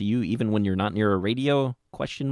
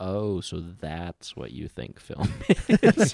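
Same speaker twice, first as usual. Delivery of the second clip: low, sing-song, patronizing and superior condescension; 4 semitones lower than usual. Showing how one can sit back after someone pushes their idea of film: condescending. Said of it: "condescendingly sit back and say".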